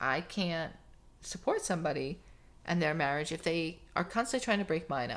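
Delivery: ordinary delivery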